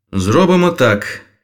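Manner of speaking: energetic, lively delivery. Narrator reads Pierre starting his plan with Okop-Aum, energetic. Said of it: "енергійно почав П'єр".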